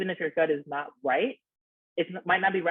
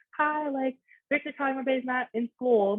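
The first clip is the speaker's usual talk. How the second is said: put-on pitched-up motherly voice; 9 semitones higher than usual. Recalling calling out of class, the speaker fakes their foster mom's voice on the phone. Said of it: "fake my mother's, my foster mom's um, voice on the phone".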